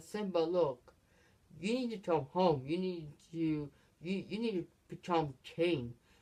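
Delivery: ordinary delivery, nothing marked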